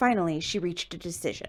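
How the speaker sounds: plain reading voice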